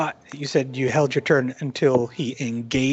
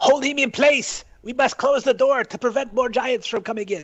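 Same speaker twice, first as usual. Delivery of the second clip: very high, drawn-out rallying battle-cry yell; 10 semitones higher than usual. Calling to allies in battle to hold a giant and close the door: yelling out. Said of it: "yelled out".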